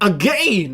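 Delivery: wacky, odd intonation on the word "again". Calling out how someone pronounced a word, say it with wacky intonation on the word again. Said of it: "that wacky intonation on the word again".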